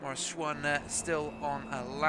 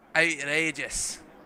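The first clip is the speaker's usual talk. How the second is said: put-on slow, loud Scottish accent. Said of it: "what's outrageous, my accent".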